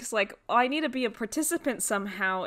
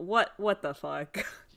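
put-on exasperated voice, lower; 3 semitones lower than usual. Retelling a cartoon scene, a character immediately done with it: imitating an exasperated character. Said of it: "He's, like, immediately done with it".

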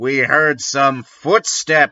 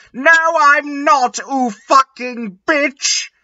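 shrill, very high, furious angry shout; 12 semitones higher than usual. Reading a fan-fiction story, Draco answers the narrator's question: shouting angrily. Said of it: "He shouted angrily".

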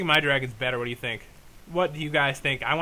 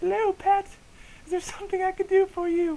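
very high, ridiculous put-on girl voice. Reading a note aloud as its writer, trying a put-on girl voice. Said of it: "Should I do a girl voice?".

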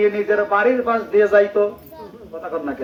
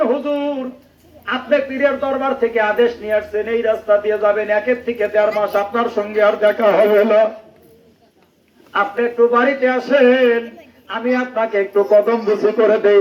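plain

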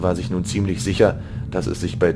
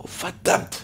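spoken in a hiss. Hearing that killers were sent after them, a woman curses: hissed. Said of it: "zischte Anaik".

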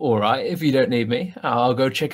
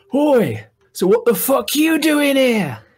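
put-on drunken, rude, brash character voice, higher and louder; 12 semitones higher, 4 dB louder than usual. Voicing a tipsy character confronting a halfling: drunken rude greeting in character. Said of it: "and I'll go".

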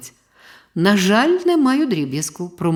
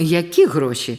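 astonished, taken aback; 2 semitones lower than usual. The man, greeted by the newsboy Serhiyko, asks back, surprised. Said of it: "здивувався чоловік".

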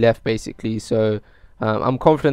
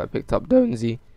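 voice cracking. Narrating a match from own footage, voice cracking. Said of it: "Nice voice crack there".

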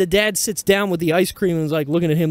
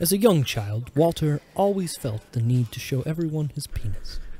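nature documentary narrator voice, quieter; 5 dB quieter than usual. Narrating a friend's childhood habit: nature documentary narrator voice. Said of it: "He sounded like the Discovery Channel guy".

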